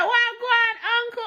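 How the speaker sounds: Jamaican patois. Retelling greeting an older man at the gate, speaking in patois. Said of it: "Like I was chatting patois".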